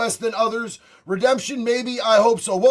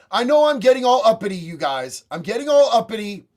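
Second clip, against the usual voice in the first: plain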